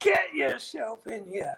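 acted-out high, yelled screaming. Telling a story, the speaker acts out one man calling another inside: retelling a scream. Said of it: "Crompton screaming at him".

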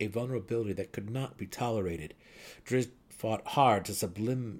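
ordinary delivery, nothing marked

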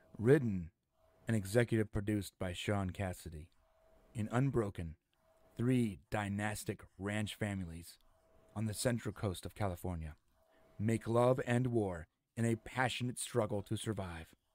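talking like asmr. Reading a headline aloud so viewers can say how it sounds, ASMR-style voice. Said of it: "So I'm going to talk like ASMR".

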